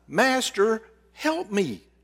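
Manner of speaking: determined woman's high-pitched pleading cry. Telling the story of a woman kneeling before Jesus: determined woman crying out. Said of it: "in the voice of a determined woman, she cries".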